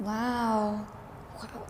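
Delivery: very quiet, flat, drawn-out sarcastic wow. An interviewer reacts to a guest's career story, sarcastic-sounding wow. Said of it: "that sounded so sarcastic".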